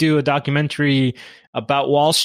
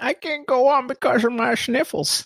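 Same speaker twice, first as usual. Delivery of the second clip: very high, put-on crying voice; 9 semitones higher than usual. Imagining Brent crying about his sniffles: Brent imitation, crying. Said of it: "That's my Brent imitating somebody voice".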